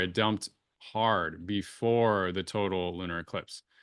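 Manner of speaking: "before" stressed hard and said slowly. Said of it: "emphasis on before".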